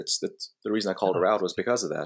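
ordinary talk, nothing marked

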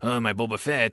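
put-on French accent. Giving an example of a French guy talking about Star Wars: Inspector Clouseau voice. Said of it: "like talking like Inspector Clouseau".

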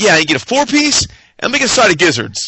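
mock offhand, called right out. Recounting how a man placed his food order: retelling a loud order. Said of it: "he just real loud".

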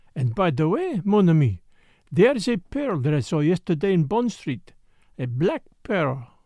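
ordinary delivery, nothing marked

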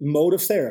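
ordinary delivery

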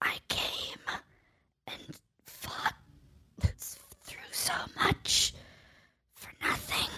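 halting, broken, whispered words in a dying voice. Voicing a dying character who coughs up blood: acted dying, coughing up blood. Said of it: "coughs a little bit and, like, spits up some blood".

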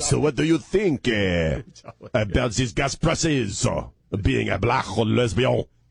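bad put-on French accent, slow and stupid. Imitating a reporter asking a question: stupid French accent. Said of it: "a really stupid French accent".

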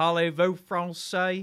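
put-on French spoken with a heavy Deep South accent. Imitating someone from the Deep South trying French: Deep South accent attempting French. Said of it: "the Deep South trying to do, like, French".

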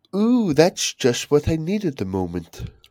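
put-on posh accent, high and swooping. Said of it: "Let's just sound a posh voice".

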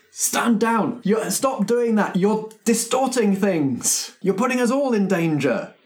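very high, shrill, loud yelling. Narrating a game, voicing one of the henchmen at the players: yelling. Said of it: "One of the henchmen yells".

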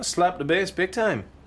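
put-on reggae-style accent. Telling someone he plays bass, in a bad reggae-guy accent. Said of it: "You sound like a leprechaun".

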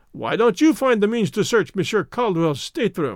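plain

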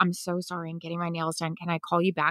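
hurried, hushed, quick little half-whisper. Showing how to answer a phone call at the salon: quick little half-whisper. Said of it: "Do the quick little whisper".

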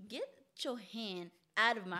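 normal talking voice

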